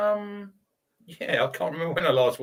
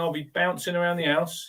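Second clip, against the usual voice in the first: ordinary talk, nothing marked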